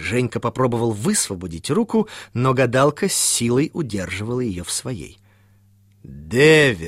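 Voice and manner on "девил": stern, low, emphatic, pressing, drawn-out word. A fortune-teller gripping a young man's hand repeats her answer to him, sternly and with emphasis. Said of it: "строго и с нажимом повторила цыганка".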